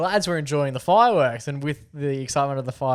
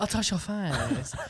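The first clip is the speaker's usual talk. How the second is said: put-on baby talk, higher and quieter; 5 semitones higher, 7 dB quieter than usual. Imitating a man on a tram talking to his kid: imitating a man's baby talk. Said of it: "he was just doing, like, baby talk".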